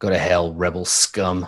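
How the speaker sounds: sneering delivery. Narrator voices a questioned character who turns his head and answers, sneering. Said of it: "he sneers".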